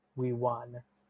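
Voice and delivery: whispering. Speaking in character to a statue after a win: whispering.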